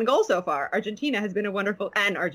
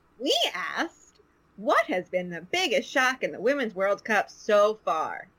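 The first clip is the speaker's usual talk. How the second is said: broadcast-style sports commentator voice. Reading out the question they asked listeners, in a commentary voice. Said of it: "That's my commentary voice".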